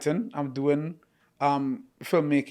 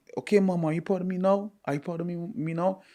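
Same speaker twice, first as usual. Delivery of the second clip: mock crying while speaking; 3 semitones higher than usual. Recounting a woman speaking to her mother, imitating a woman crying. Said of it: "she's crying and she's saying".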